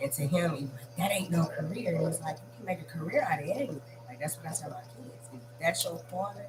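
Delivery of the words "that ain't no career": ordinary talk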